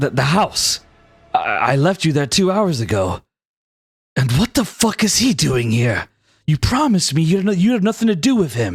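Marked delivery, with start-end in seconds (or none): 1.3-8.8 in shock. Voicing a character who finds his partner with someone else, in shock. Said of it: "As he looks at Graven in shock".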